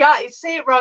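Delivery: ordinary talk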